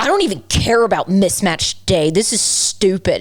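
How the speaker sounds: put-on angry child voice. Retelling Lawson's complaint about mismatch day, imitating Lawson being mad. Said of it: "He was so mad at me".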